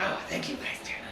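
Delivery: put-on kobold accent and voice. Voicing the kobold Dovetail thanking a player for gold: kobold's accent. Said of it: "what was his accent?".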